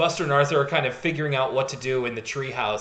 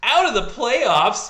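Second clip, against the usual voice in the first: high, loud, slow aghast cry of disbelief. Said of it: "He just goes".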